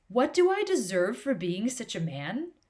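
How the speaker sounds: dripping sarcasm, a bit salty. Performing a salty line of Socrates: put-on sarcastic Socrates voice. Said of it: "I'm going to put on my best sarcastic Socrates voice".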